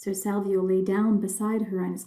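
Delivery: ordinary delivery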